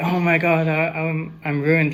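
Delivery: scared, frightened outburst with stumbling, stammering words. Retelling a vision where Isaiah reacts in fear: imitating a fearful reaction. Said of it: "Isaiah's reaction was kind of fear".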